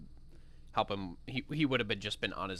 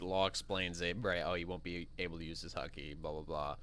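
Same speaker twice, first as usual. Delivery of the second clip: normal talking voice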